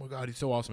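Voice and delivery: starstruck, gushing, hyped-up superfan tone. Retelling how a fan hyped a wrestler in an interview: imitating someone hyping. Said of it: "hyping him".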